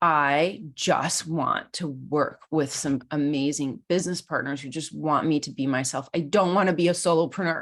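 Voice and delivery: put-on, sudden tearful crying blurt. Retelling a desperate moment of blurting out a wish: retelling a crying outburst. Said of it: "It just blurts out as I'm, like, crying".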